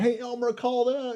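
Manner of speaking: high, calling-out voice. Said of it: "the doctor's in the room going".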